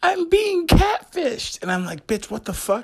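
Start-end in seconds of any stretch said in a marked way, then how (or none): 0.0-1.6 ear-splitting, very high, very loud shrill scream. Telling a story, the speaker acts out what a woman screamed: retelling a scream. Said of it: "Then she screams".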